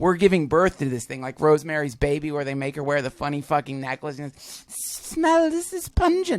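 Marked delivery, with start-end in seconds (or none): 5.1-6.4 squeaky voice, badly done. Retelling a scene from Rosemary's Baby: terrible impression of a Rosemary's Baby character. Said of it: "that's a terrible impression of her".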